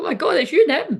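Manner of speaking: high, loud, excited gushing. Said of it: "they were like".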